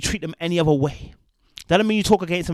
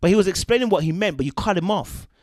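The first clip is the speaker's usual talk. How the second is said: ordinary talk, nothing marked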